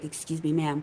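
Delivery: acted whispering. Retelling how a masseur spoke into her ear: imitating someone whispering. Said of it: "he whispers in my ear".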